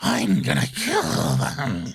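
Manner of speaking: very slow, growling, threatening monster voice. Joking about a character's voice in monster form: imitating growling Titan Eren. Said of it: "it just adds, like, an extra growl to his voice".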